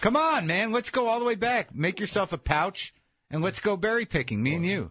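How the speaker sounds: mocking tone. Responding to talk of what early people ate, mocking. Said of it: "you're mockingly saying that".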